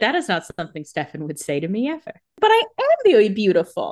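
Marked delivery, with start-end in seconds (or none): none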